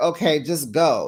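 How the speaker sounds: plain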